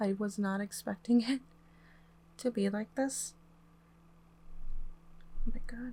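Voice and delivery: emotional, a little overcome, voice catching, slightly choked up. Helping someone spell words by pointing to letters: sounding a little emotional. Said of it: "Sorry that I sound a little emotional".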